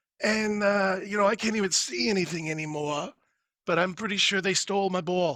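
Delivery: put-on voice of a very old man. Asked to do another voice, the speaker plays a really old fella. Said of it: "this really old fella".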